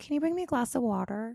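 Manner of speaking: very hushed, soft, high, affected feminine voice. Speaker acts out asking him for water in bed, put-on affected feminized voice. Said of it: "an affected, feminized voice unknowingly".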